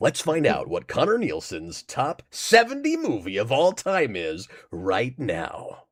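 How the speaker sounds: radio countdown host voice. Streamer introducing Connor Nielsen's top movie pick: Casey Kasem Top 40 voice. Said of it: "my American Top forty voice".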